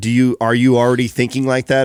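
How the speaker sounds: ordinary delivery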